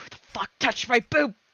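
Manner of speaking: whispering angrily. Voicing Ryoka, who was touched in the dark: Ryoka angry whisper. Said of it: "She's angry whispering".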